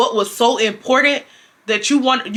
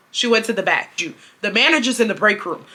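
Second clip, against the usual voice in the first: ordinary talk, nothing marked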